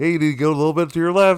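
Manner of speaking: very loud, high barking voice. Telling a story about a young kid instructing an old man, imitating someone barking orders. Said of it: "the young kid's like barking at him".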